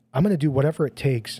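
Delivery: normal talking voice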